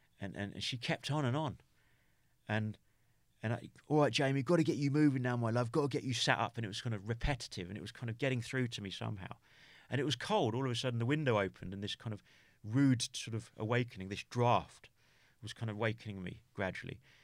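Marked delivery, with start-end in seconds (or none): 3.9-6.6 put-on Essex accent, higher. Retelling what a nurse said on waking in hospital: imitating a nurse's essex accent. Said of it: "a nurse distinctly with a sort of an Essex accent".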